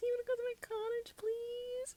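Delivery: put-on high, smiling voice. Retelling a hospital scene with Ilya, imitating Shane high as fuck. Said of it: "high as fuck, like, smiling".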